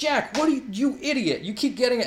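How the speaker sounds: high-pitched, squeaky, mocking put-on character voice.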